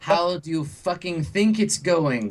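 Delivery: put-on angry older military woman. Voicing the older woman in the military outfit on a call: pissed-off older military woman. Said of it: "and she looks pissed".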